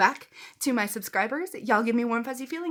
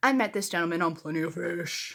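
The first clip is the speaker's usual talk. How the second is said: put-on creepy voice, much lower pitch; 5 semitones lower than usual. Speaker starts a dating story, naming the dating app in a creepy voice. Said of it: "you have to say it in a creepy voice".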